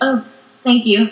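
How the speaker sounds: normal talking voice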